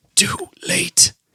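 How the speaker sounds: airy, breathy, faint whisper. A tearful character, hand dropping, speaks his final words: breathy whisper. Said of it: "He breathily whispers".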